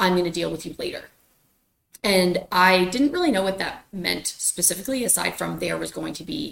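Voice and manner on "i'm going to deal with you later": muttered quietly under the breath. Retelling what he said under his breath: imitating a muttered threat. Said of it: "Under his breath, he said".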